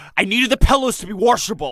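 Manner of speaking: put-on high-pitched, gravelly, pushed Midwestern accent. Imitating how Mike Lindell says a word: Mike Lindell gravelly Midwestern voice. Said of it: "He's like".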